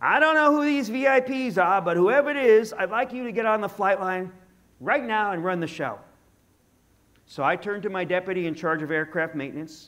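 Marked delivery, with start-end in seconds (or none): 0.0-6.0 put-on Northeast US accent, hint of irritation. Retelling what Tony told you when you arrived on duty, imitating Tony's Northeast U.S. accent. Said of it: "I'll try to imitate his Northeast U.S. accent".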